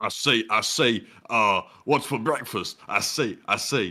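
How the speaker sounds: low, slow, big cartoon rooster voice. Asked to do a cartoon voice, doing a Foghorn Leghorn voice. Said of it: "I was doing the rooster".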